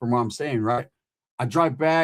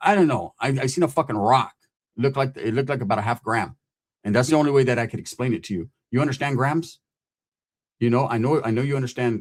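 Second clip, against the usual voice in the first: normal talking voice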